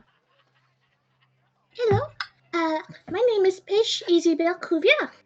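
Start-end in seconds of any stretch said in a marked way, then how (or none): 1.7-5.1 high, beaming, smiling, delighted voice. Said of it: "Paige is going to gasp and smile".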